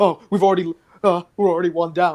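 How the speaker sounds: game-character voice, freaking out. A game master voices an enemy who sees his friend's corpse, NPC freaking out. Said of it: "He's kind of like freaking out".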